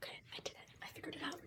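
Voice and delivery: whispered, breathy, barely voiced, very quiet. Saying they finally figured it out: whispering. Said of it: "are we gonna be whispering this whole time?".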